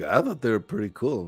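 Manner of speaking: muttered whisper under the breath. Voicing Johnny, who reacts to his armor being scrapped: whispering under breath. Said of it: "Johnny just whispers under his breath".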